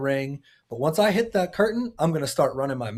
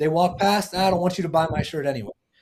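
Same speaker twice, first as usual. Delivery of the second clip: usual speaking voice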